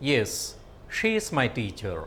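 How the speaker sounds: pitch drops away on teacher. Teaching children answer intonation, with falling tone on teacher. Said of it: "Falling tone. This indicates an answer".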